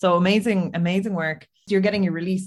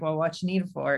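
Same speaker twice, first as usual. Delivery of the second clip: mock-deadpan delivery, faster; 4 dB quieter than usual. Speaker describes a bleak comic scene, quoting a reply: retelling a deadpan line. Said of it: "that kind of deadpan".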